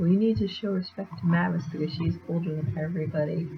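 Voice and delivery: ordinary talk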